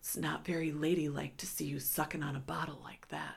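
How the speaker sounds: leaned-in, hushed whisper, very close. Retelling what an uncle said leaning in by her ear: imitating someone whispering. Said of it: "whispered it in my ear".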